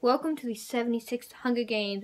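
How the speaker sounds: ordinary delivery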